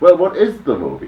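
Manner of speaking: high, loud, baffled exclaimed outburst.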